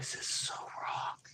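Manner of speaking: very quiet, slow, drawn-out total whisper. Retelling what the friend on the boat said: imitating a whisper. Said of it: "this total whisper goes".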